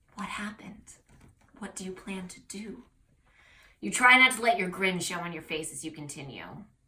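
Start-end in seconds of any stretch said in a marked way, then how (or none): 0.2-2.9 hushed whisper, very quiet, under the breath. Reading aloud, a startled listener asks quietly: whispering. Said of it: "She continues in a whisper".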